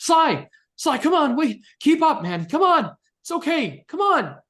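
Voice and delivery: very high, loud, urging, calling yell. A character keeps yelling for Sly to keep up, yelling after Sly. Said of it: "Keep yelling".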